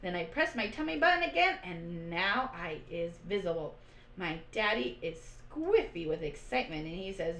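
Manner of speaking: ordinary delivery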